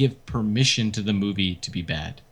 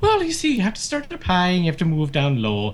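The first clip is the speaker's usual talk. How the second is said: lilting, sing-song put-on Irish accent; 7 semitones higher than usual. Joking about a movie reboot, asked why he is talking Irish, in an Irish accent. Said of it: "That's how you do an Irish accent".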